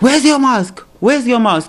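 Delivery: mock very high screaming, rattled off quickly. Retelling a man who pushed the speaker out: retelling a man screaming. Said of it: "He's just screaming".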